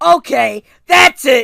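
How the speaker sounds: very loud, shrill, high-pitched outburst. Retelling how John slammed his hands on the table: imitating John saying it loudly. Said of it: "really loudly said".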